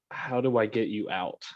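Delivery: hushed, soft whisper. Speaking in character to someone at the ship's helm: whispering. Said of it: "And I'll whisper".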